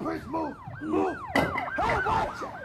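very high, shrieking, panicked voice.

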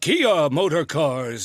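put-on long-winded old-style announcer. Imitating an announcer's later commercial read: Gary Owens windy voice. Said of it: "he had that windiness".

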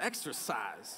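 soft delivery with a little gangster attitude. Leading a repeat-after-me word, then redoing it: a little bit of gangster. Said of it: "say it with a little bit of gangster".

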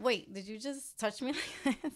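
play-acted, challenging, triggered retort with attitude. Retelling getting triggered, imitating own past attitude. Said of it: "using my voice with the wrong attitude".

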